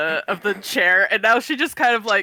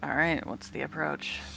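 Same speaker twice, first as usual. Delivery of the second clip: very quiet, low, hushed mutter under the breath; 5 semitones lower, 12 dB quieter than usual. Voicing a character asking about the approach while nearing someone: under her breath. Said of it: "under her breath a little bit".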